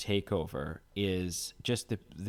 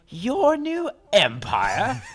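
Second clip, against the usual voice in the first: sassy put-on incredulous voice, higher and louder; 10 dB louder than usual. Quoting a sassy line from a confrontation: sassy Obi-Wan line. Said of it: "It's like Obi-Wan's sassiest line".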